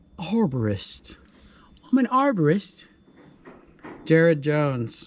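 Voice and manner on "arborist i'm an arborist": put-on English accent, sing-song. Speaker showing how he tells customers what he does, English accent. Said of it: "I tell customers with an English accent".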